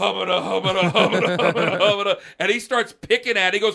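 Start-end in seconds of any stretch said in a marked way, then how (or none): 0.0-2.2 put-on mock stammer, higher pitch. Retelling being questioned about an accident, the speaker acts out own stammering. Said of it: "And I'm going".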